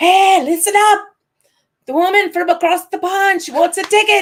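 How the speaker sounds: very loud, high-pitched bellow. Retelling a woman calling out to everyone about a ticket, imitating her bellowing. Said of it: "This woman bellows out to everyone".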